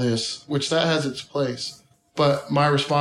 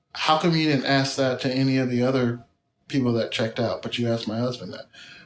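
usual speaking voice

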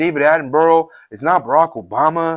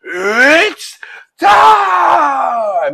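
play-acted, very high, drawn-out scream at the top of the lungs; 11 semitones higher, 5 dB louder than usual. Praising an announcer, the speaker acts out his famous call, imitating Bruce Buffer screaming. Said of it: "He's just screaming".

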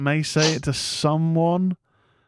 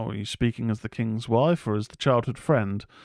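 usual speaking voice

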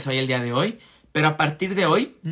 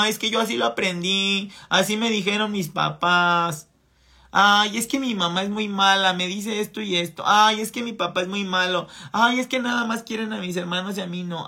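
put-on plaintive, whiny, complaining, childish grumbling voice; 4 semitones higher than usual. Mocking the excuses of someone stuck as a victim child, imitating a whiny complainer. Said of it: "quejumbroso de".

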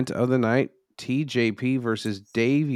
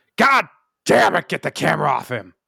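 put-on exasperated, high, rough yell; 5 semitones higher, 4 dB louder than usual. Imitating the boss yelling during the show: impression of Vince yelling. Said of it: "what Vince said that night".

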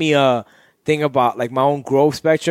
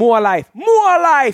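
put-on Jamaican accent, very high and louder; 11 semitones higher, 5 dB louder than usual. Toasting the guys with cheers, calling out in a Jamaican-sounding accent. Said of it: "that sound Jamaican".

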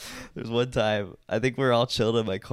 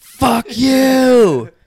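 very loud, shrill scream, pitched very high; 15 dB louder than usual. Retelling screaming back at a driver who peeled out: retelling a scream. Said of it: "I screamed back".

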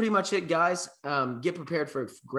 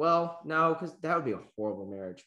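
usual speaking voice

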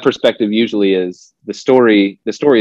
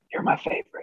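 hushed, barely voiced whisper. Retelling what mom would say to each sibling: imitating mom whispering. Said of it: "my mom would always whisper to us".

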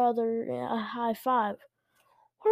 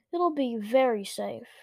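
plain

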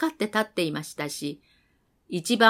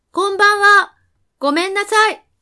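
very loud, very high-pitched shouting; 10 semitones higher, 8 dB louder than usual. Standing straight before a silent house's dim kitchen, calling out again, shouting. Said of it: "ジョバンニはまっすぐに立ってまた叫びました".

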